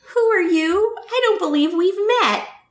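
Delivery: high-pitched, sugary, cloying, falsely sweet voice. Narrating a story, voicing Dolores Umbridge: sickly sweet voice. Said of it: "Dolores asked in a sickly sweet voice".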